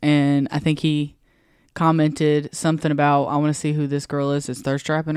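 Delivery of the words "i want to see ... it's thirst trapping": usual speaking voice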